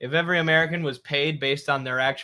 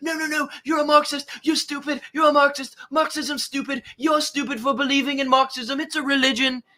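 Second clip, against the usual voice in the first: put-on high yelling in English accent; 10 semitones higher than usual. Retelling a TV host shouting down a guest: imitating Stuart Varney yelling in English accent. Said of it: "He's just yelling like this in his English".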